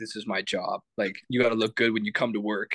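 imitated serious manner. Retelling another person's reply to a question: imitating a serious tone. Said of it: "real serious".

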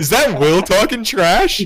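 mock challenging tone, high-pitched, loud and slow. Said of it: "He's like".

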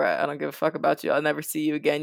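plain

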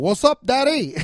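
bad fake Cuban accent, loud and high. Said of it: "Al Pacino cannot do a Cuban accent".

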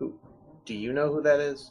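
very quiet, hushed voice. Playing a character who speaks to a floating orb: speaking quietly. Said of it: "talk to the orb real quietly".

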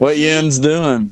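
slow, high Southern drawl.

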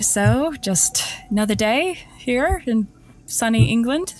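ironic, sarcastic tone. Greeting Jack and remarking on the English weather: sarcastic. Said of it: "I was being sarcastic".

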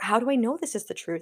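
ordinary delivery

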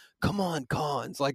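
acted-out muttering under the breath. Retelling a man's reaction while someone asks Cons questions; muttering under breath. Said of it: "under his breath".

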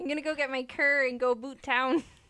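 loud, over-the-top Canadian accent, laid on thick. Joking about how to sound majorly Canadian: exaggerated Canadian accent. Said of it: "How do we go like major Canadian?".

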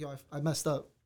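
ordinary delivery

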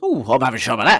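imitated panicked delivery. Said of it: "Tennant clearly panics, looks in the fridge and goes".

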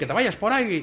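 loud, acted-out shouting. Acting out Michelangelo answering the Pope back, imitating someone shouting. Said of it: "Miguel Ángel le gritaba al Papa también".

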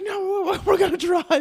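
furious, very high, loud angry shout.

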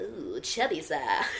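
silly, babbling cartoon creature gibberish voice. Joking with a friend about voicing the next Minions movie, Minion voice. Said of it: "they're always like".

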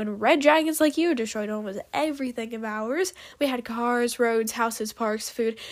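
plain

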